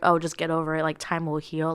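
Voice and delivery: ordinary talk, nothing marked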